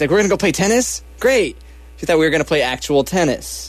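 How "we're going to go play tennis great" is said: mock, excited, eager, high-pitched delight. Retelling a friend's girlfriend overhearing talk of tennis, imitating someone excited. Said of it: "She got all excited".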